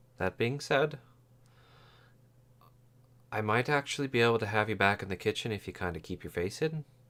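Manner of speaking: speaking softly, real quiet, hushed voice. Voicing a woman in a tabletop game who speaks to the player's character: speaking real quiet. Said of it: "she's speaking to you real quiet".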